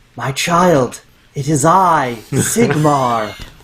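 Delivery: whispered put-on god voice. Leaning in to whisper in a waking man's ear as Sigmar: whispering as the god Sigmar. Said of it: "I lean up and whisper in his ear".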